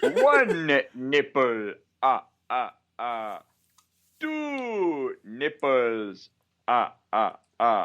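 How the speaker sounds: "Two" drawn out with the pitch swinging. Joking about a cameo as the Count, counting: the Count voice. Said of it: "a cameo in Family Guy as, uh, the Count".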